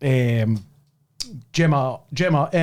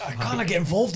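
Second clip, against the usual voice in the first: ordinary talk, nothing marked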